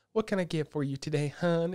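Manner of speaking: Wisconsin-Southern sounding phone voice. Imitating a phone contact who takes your calls, Wisconsin-sounding, Southern-sounding accent. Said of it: "like Wisconsin-sounding, Southern-sounding".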